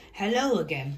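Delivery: ordinary delivery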